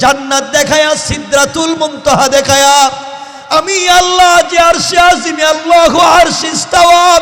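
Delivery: high, loud, belted climactic shout.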